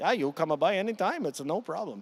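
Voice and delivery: put-on loose Italian accent. Speaker retells a friend's offer to come by his place: Andrea's Italian accent. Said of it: "kind of in his Italian accent".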